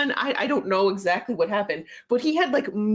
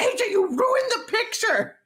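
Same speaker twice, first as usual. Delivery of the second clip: put-on, very high, accusing scream; 10 semitones higher than usual. Recounting a chaotic group photo, acting out someone's shout: retelling a scream. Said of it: "Christy screams out".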